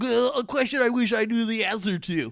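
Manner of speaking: very high, loud, energetic put-on voice. Doing voices for the others, asking a question, in a Kenny voice. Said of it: "I'm doing Kenny voice".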